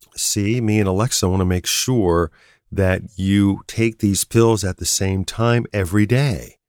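ordinary delivery

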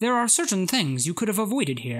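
sarcastic, snide robot voice. Describing a game logo that taunts players, speaker does the HAL robot voice. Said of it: "it like talks to you like a robot".

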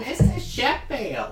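very high, open-mouthed voice. Trying out character voices with others, calling out in The Nanny impression. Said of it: "that's what she sounds like".

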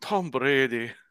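loud, high, unconvincing put-on German accent. Imitating Germans watching a football play: put-on German accent. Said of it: "That wasn't German at all. I don't know what accent that was".

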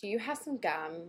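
put-on Valley girl accent. Playing a valley girl in a car during a reenactment: valley girl voice. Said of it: "there's a Valley girl in her backseat".

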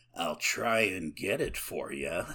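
very creepy, unsettling tone. Retelling a movie scene, quoting Walter: imitating Walter, very creepy. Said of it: "and very creepy".

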